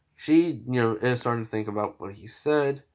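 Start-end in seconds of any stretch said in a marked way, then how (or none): none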